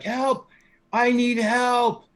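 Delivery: very high, very slow, drawn-out yell. Describing a man at the bars holding a dagger, yelling for help. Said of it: "he starts like yelling again".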